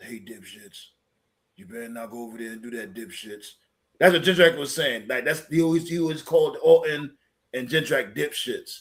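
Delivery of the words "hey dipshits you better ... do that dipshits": very hushed, low, stern voice under the breath. Retelling what Triple H would say to the others: imitating Triple H. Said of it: "Triple H would be like".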